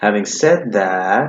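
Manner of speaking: pitch rises then falls on that in said that. Lesson on intonation before commas, rising then falling on said that. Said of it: "you're going to have this rising, falling intonation before the comma, right? ... see that intonation?".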